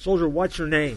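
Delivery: insistent, demanding voice. Narrating a joke about a soldier asleep on guard duty, demanding. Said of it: "demanded Alexander the Great".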